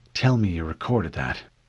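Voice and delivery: ordinary delivery, nothing marked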